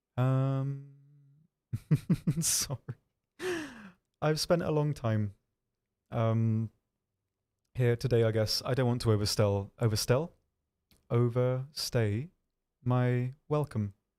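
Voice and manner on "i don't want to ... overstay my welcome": stiff, very robotic, mechanical delivery. Ending a long day, the speaker excuses themselves in a robotic voice. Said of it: "I said that in a very robotic voice".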